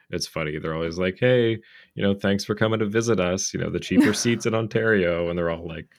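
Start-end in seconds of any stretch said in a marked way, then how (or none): 1.2-5.3 loud, dripping, sarcastic put-on fake hospitality. Retelling how fans in Ottawa greet visiting Leaf fans: imitating sarcastic Ottawa fans. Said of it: "It's really sarcastic".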